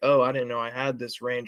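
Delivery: ordinary talk, nothing marked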